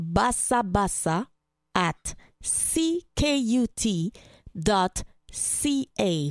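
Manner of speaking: very slow delivery, spelled out letter by letter.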